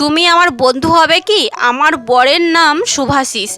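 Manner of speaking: ordinary delivery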